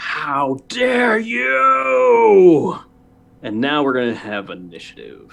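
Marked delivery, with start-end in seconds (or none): 0.0-2.8 high, shrill, enraged, outraged crowd scream. Voicing the people behind a player as they scream in outrage: townsfolk screaming in outrage. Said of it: "scream out".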